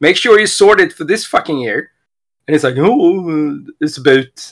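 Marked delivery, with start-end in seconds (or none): 2.8-4.5 put-on very slow, halting, weird French accent. Retelling J P's excuse about his phone: J P's weird French accent. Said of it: "and his fucking French weird accent".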